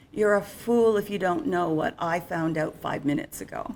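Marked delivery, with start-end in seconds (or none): none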